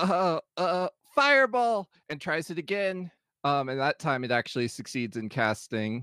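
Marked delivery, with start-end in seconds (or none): 0.0-1.9 high, puzzled, faltering, hesitant speech. Voicing a character whose spell fizzled, trying again: confused. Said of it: "she looks down very confused".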